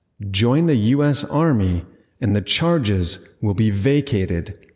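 ordinary talk, nothing marked

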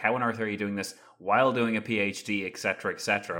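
usual speaking voice

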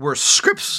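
sudden break in the voice mid-phrase. Mid-explanation to the other speaker, voice cracking. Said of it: "you Hear that voice crack?".

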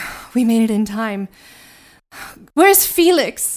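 loud, panting, breathing hard between words. Voicing a rescuer who just burst in: breathing really hard. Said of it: "Agatha just breathes really hard".

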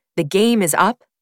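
plain

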